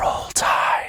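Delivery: gentle, soft whisper in ASMR style. After blowing out the microphone, saying the phrase: ASMR-style whisper. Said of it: "I'll just whisper it in an A S M R style".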